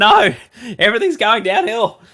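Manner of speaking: very high cry of alarmed, panicked dismay. Retelling seeing a player roll his ankle before trades: imitating own panicked reaction. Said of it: "I had a big panic stations".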